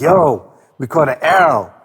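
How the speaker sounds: put-on livid voice, very slow, word by word. Retelling a phone call after the remix played: imitating livid rizza. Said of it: "he was so livid".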